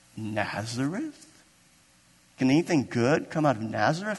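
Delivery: soft, mock questioning inflection on Nazareth. Speaker retelling Nathanael's question to Philip, in Nathanael's inflection. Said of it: "That was the inflection of his voice".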